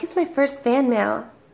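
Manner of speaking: usual speaking voice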